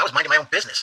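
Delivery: ordinary talk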